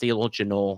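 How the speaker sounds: folksy put-on upper Midwest Minnesota accent. Describing people who live up north, the speaker shows how they talk, Minnesota accent. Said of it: "that's more Minnesota".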